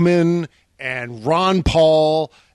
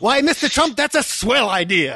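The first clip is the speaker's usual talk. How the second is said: put-on 1940s newsboy voice, higher; 7 semitones higher than usual. Acting out someone cheering on mr. trump, in a 1940s newsie voice. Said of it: "talking like he's like a 1940s newsie".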